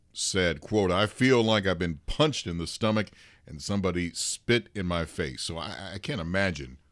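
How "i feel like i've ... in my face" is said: ordinary talk, nothing marked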